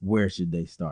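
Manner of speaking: normal talking voice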